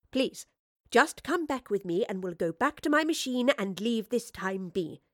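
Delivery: ordinary delivery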